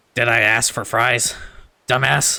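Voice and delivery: nineties animated-show cartoon character voice. Opening a video for a viewer with an attempt at Butthead. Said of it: "my best attempt, attempt at Butthead".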